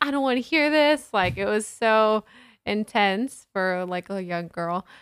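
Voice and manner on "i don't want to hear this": high, fast, tearful, upset yelling. Recalling leaving the kitchen as a young girl, yelling at her dad: retelling crying and yelling. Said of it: "crying, yelling at my dad, like".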